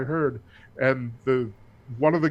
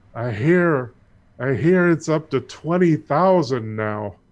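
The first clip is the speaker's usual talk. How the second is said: put-on drunken-sounding speech, louder; 5 dB louder than usual. Voicing a drunk who leans on a player: drunken voice. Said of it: "leans on you drunkenly and says".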